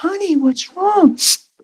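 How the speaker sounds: very high, honey-sweet voice with concern. Speaker retells a woman calling to him across the parking lot: imitating a sweet woman. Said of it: "She's all sweet".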